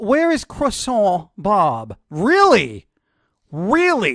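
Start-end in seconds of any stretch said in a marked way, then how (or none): 0.0-2.0 mock French accent on croissant, higher pitch. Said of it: "Did you literally say that with a French accent?".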